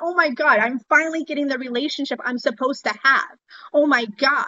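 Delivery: mock over-the-moon, giddy, excited outburst. Retelling own words when a father started calling weekly: imitating own past excitement. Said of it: "I got so freaking excited going".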